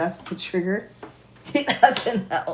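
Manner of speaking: speaking through laughter. Addressing everybody about a talk-radio phone call, the speaker is laughing while talking. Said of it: "I have to stop laughing".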